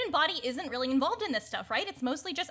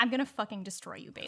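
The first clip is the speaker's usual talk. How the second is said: very quiet, low, menacing delivery; 5 semitones lower, 4 dB quieter than usual. Answering a rival character at the door: very quiet threat. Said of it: "Very quietly".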